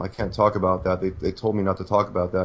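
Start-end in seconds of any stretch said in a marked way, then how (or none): none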